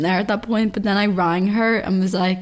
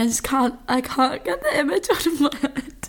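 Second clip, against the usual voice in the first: talking through bursts of laughter, pitched up; 6 semitones higher than usual. Reading out a funny story sent in by a housemate, laughing while talking. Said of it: "I'll stop laughing".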